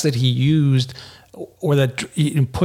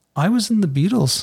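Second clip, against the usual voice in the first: plain, unadorned, simple tone, pitched up; 6 semitones higher than usual. Retelling an aging musician's answer about whether his best music is ahead, quietly. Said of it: "he just quietly went".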